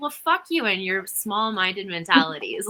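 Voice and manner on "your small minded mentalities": ordinary talk, nothing marked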